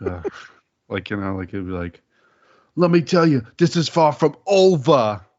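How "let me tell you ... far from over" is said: forced, loud, high, overplayed, drawn-out promo voice. Show the others how he plays it up too much, with an overplayed Bubba impression. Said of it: "he plays it up too much".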